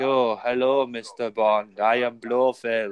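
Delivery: bored, dead flat, very slow, drawn out. Mocking a boring villain performance: bored blofeld impression. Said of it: "he's just so boring in the role".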